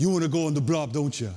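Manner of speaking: put-on Hawaiian-accented speech. Retelling what a lineman he looked up to said beside him, Hawaiian accent. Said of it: "in this Hawaiian accent".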